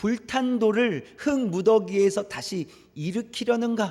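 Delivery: slow, mocking, sneering read stressing "흙".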